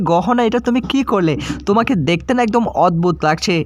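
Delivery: plain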